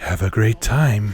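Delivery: breathy, airy woman's voice, slow and drawn out. Describing a pinball machine's multi-ball announcement, imitating it in a breathy female voice. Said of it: "this breathy female voice going".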